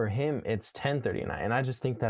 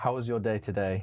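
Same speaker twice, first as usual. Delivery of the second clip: put-on English accent. Asked by the other speaker to try one, doing an English accent. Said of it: "I want to hear you do an English accent".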